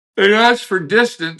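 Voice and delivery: words stretched by a yawn. Answering a question mid-conversation, talking through a yawn. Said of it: "sorry for my yawning".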